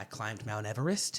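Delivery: doubtful upward rising lilt on "Everest". Quoting Gary Johnson: imitating an upward inflection. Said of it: "he says with an upward inflection".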